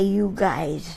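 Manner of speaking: ordinary delivery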